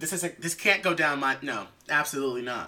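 ordinary talk

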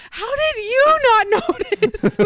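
very high, drawn-out, comic, exasperated yelling. Retelling turning around to the other person, retelling a funny yell. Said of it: "and I'm literally yelling this. Yeah, like the funny yelling".

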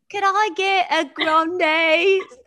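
very high, very loud, clumsy bad English accent. Retelling ordering at a drive-thru on a dare: bad English accent. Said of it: "Order in an English accent".

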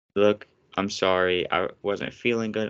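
normal talking voice

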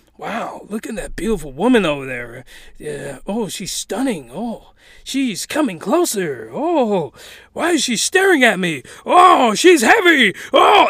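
a man's voice. Retelling what a pole thinks in a scene: retelling a man's voice. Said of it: "is another man's voice".

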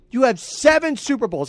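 rising, irritated, exasperated tone. Complaining that a player came back for unfinished business: getting angry. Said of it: "I'm kinda getting angry about that".

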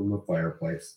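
ordinary delivery

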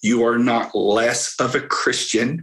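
slow, deliberate, each word laid out carefully. Repeating a point to listeners, saying it again slowly. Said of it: "say this again slowly".

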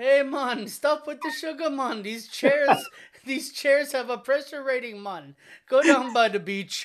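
put-on very loud, high Jamaican accent, hollering. Imagining waiters walking up to a guest pounding sugar drinks, imitating a Jamaican waiter. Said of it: "those poor Jamaican waiters just walking up".

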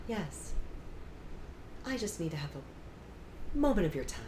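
put-on dead-calm, soft, serious tone. Retelling what mom said after parking and coming into the school, imitating mom's calm serious voice. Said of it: "my mom gets real serious when she has this calm voice".

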